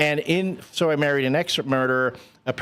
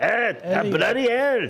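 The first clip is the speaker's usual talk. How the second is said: put-on Scottish accent, yelling, higher; 7 semitones higher than usual. Retelling a movie scene, imitating Mike Myers' Scottish father character yelling. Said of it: "Mike Myers' character yelling at me from behind".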